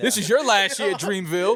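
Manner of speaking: high, laughing, mock-menacing tone.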